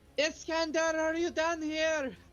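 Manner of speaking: calling-out yell, pitched very high. A player's character calls down there using thaumaturgy, yelling down there. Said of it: "I'm just gonna yell down there with thaumaturgy".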